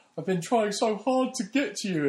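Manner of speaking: very high, slapstick, jokey, sarcastic exasperation. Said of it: "in almost sarcastic and a jokey sort of way".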